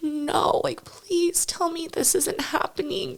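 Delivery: acted, desperate, anguished, high-pitched scream. Recounting falling to the knees after terrible news, retelling an anguished scream. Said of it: "I just started screaming".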